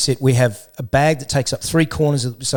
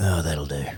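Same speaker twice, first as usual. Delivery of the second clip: very low mumble, muttered under the breath; 11 semitones lower, 8 dB quieter than usual. Recalling own past self while throwing out bottles: imitating own mumbling under breath. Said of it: "me mumbling under my breath".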